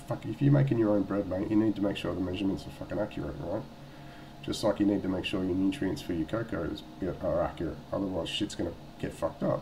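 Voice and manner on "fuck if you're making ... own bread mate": plain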